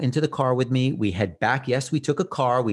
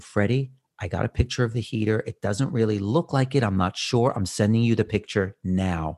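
acted-out whispering; 3 semitones lower than usual. Speaker retells a phone call made while whispering, re-enacting own whisper. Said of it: "but I'm whispering".

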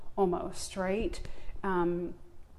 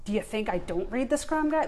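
mock indignant, argumentative tone, faster; 3 semitones higher, 4 dB louder than usual. Speaker acts out how she wanted to argue back at people; retelling an argumentative comeback. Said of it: "So I want to meet it with that tone".

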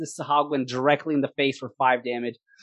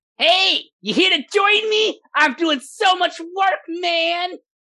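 very high, slow, drawn-out little gnome voice; 4 dB louder than usual. Voicing a small gnome who greets the party: voicing a small gnome. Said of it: "he slowly looks over his left shoulder".

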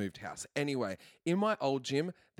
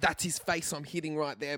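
imitated angry woman yelling, higher; 4 semitones higher than usual. Retelling what a gym client yelled while punching a bag: imitating a woman yelling. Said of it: "yelling out".

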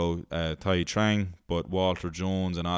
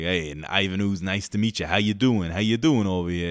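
put-on American accent; 4 dB louder than usual. Recounting a movie character greeting everyone, American accent. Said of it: "in his American accent going like".

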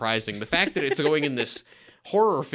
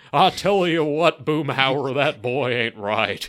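put-on horse voice, louder; 4 dB louder than usual. Quoting a line to another speaker: horse impression. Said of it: "You actually do a really good horse impression".

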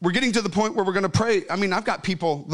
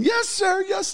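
mock very high-pitched, tearful crying; 12 semitones higher than usual. Retelling a woman's answers at a loud altar call: imitating a crying woman. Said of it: "And she's crying".

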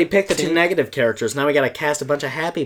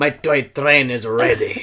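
put-on not-quite-Scottish accent; 3 semitones lower than usual. Imitating a character whose accent is not quite Scottish: Aunt Billy's slipping accent. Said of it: "It goes in between different accents".

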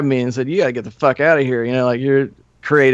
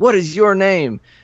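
high-pitched, hollered yelling; 6 semitones higher than usual. Retelling how the owner of the place yelled at the speaker, imitating the owner yelling. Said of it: "he's yelling at me".

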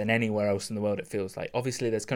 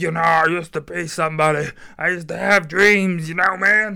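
put-on very loud, high, belted old jazzman voice; 7 semitones higher, 10 dB louder than usual. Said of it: "doing freaking [name] impression here".

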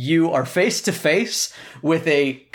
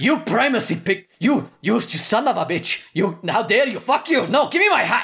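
angry yelling, higher pitch; 7 semitones higher than usual. Voicing Robert after a player takes his hat: furious shouting Robert. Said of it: "You took Robert's hat?".

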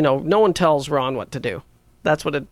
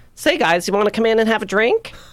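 higher-pitched, casual voice called from a distance; 6 semitones higher than usual. Retelling Larry the Cable Guy inviting them onto his bus: imitating his real voice. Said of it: "he talks like this".

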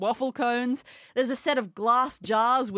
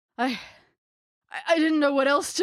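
dejected, downcast stammering, much higher; 4 semitones higher than usual. Playing a man confronted by someone with crossed arms, dejected and stammering. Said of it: "His shoulders slump".

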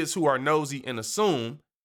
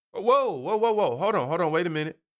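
normal talking voice

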